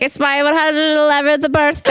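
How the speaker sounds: mock slurred drunk voice. Retelling the birthday scene from an audiobook: imitating drunk Bilbo Baggins. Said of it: "And he's all drunk".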